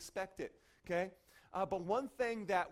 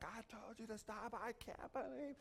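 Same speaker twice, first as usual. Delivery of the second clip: put-on furious, drawn-out angry yelling; 4 semitones higher, 10 dB quieter than usual. Retelling a man still yelling ten minutes later: imitating someone yelling. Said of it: "and he's yelling".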